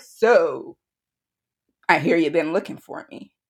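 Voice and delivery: put-on gruff, abrasive, defensive tone. Retelling a phone call from the father: imitating a gruff, abrasive father. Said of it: "just so sort of gruff and, like, abrasive".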